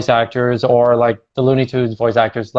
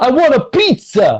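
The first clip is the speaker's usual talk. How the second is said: put-on Brooklyn accent pitched way up; 12 semitones higher than usual. Mocking a cringy performance you heard, quote it in a put-on Brooklyn accent. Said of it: "like a Brooklyn accent there".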